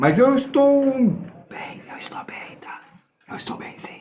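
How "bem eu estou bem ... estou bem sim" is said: near-whispered, soft, breathy, held-back voice. Speaker addressing viewers while having to keep their voice low, speaking softly. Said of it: "Só que eu tenho que falar baixo".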